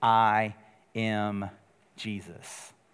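very low, flat, matter-of-fact deadpan. Retelling how he answers Paul's question about who he is: retelling a flat reply. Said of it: "And he says flatly".

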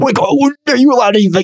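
high, whiny complaining tone.

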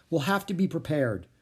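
ordinary delivery

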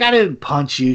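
normal talking voice

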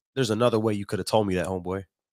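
ordinary talk

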